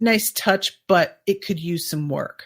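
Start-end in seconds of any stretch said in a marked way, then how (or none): none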